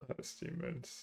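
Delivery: speaking very quietly.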